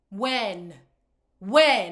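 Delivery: exasperated when, said repeatedly. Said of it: "repeated louder exasperated question".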